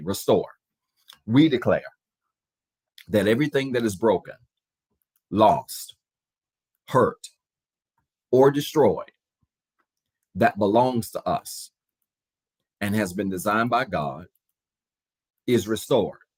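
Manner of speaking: slow, measured, deliberate delivery. Leading a declaration for listeners to repeat after them, said slow. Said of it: "I'll say it slow".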